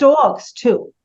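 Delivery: New York vowel in "dogs". Chatting with another speaker, a New York accent slipping out. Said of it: "a New York accent coming out there when you said dogs".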